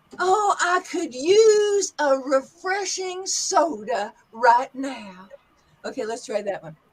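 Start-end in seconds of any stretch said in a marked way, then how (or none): 0.2-5.3 Southern US accent, slow easy stretched drawl. Demonstrating accents, the speaker says a line in a southern accent. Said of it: "let's go to the southern accent".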